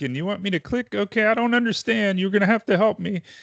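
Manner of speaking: put-on elderly woman voice, pitched way up. A man talking to a phone scammer, in a put-on old lady voice. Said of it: "they'll start using this old lady's voice".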